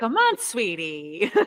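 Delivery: put-on loving, coaxing, doting grandmother voice. Joining a bit about a pushy but loving grandma: doting grandma voice. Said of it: "I like that grandma energy".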